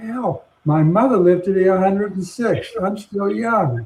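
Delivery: put-on genteel Southern accent in belle style. Quoting a neighbor on her hundred and first birthday: imitating Isabel's Southern accent. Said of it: "in her wonderful Southern accent".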